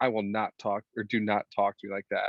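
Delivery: plain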